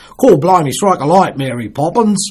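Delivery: bad British accent, stretched vowels, loud, high. Speaker explaining why British accents are so often done badly: bad British accent. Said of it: "The British accent is famously badly done".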